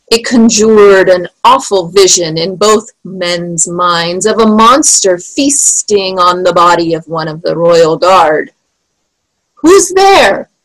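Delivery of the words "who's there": calling out, pitched very high. Spittleworth calls out into the fog, in a high-pitched call. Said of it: "called in a high-pitched voice".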